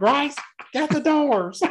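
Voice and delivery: high-pitched fake yokel voice. Retelling a movie character calling to Grace, a speaker uses a backwoods hick voice. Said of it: "Why do you think I sound like a backwoods thing?".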